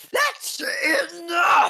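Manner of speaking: very high, shrill screaming shout. Voicing Dorothy as the hatch slams shut: Dorothy screaming. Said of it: "Dorothy just screams".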